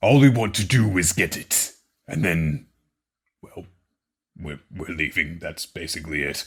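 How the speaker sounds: put-on monster voice. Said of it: "I don't know if he talks like this".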